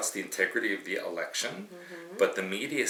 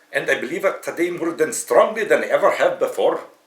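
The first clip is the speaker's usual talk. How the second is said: loud, high, booming, laid-on, put-on Scottish accent; 6 semitones higher, 12 dB louder than usual. Asked to quote a politician's words in a scottish accent: imitating a scottish accent. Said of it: "Can you do that?".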